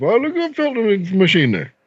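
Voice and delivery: put-on heavy, high, sing-song Newfoundland accent. Retelling a customer asking for filters: imitating Carl's Newfoundland accent. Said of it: "I'm gonna try to say it like how Carl says".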